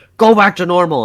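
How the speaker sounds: put-on, loud, confused, bewildered shouting. Retelling a scene where the boyfriend yells at her: imitating someone yelling. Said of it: "yelling at her".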